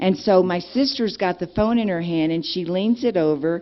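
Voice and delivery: plain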